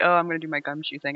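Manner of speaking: put-on light, playful teasing tone. Retelling how a character teases another character, imitating a teasing tone. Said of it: "teasing Mara".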